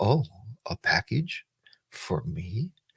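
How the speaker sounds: very mellow, soft, very slow, drawn-out voice. Telling a story, quoting the girl answering the UPS man: imitating a girl's mellow voice. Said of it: "And she talks like that".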